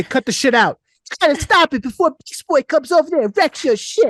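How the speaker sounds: very high-pitched cartoon voice. Retelling how he got his kid to stop being bad, Beast Boy voice. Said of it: "I used to do Beast Boy".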